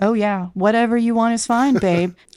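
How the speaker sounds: mocking, fake cool, nonchalant girl voice. Mocking how someone acts unbothered in bed: mocking fake cool girl voice. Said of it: "fake cool girl energy".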